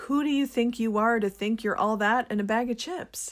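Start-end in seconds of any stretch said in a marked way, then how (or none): none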